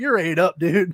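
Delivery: ordinary talk, nothing marked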